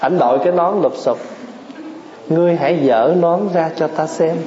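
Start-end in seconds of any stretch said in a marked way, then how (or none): none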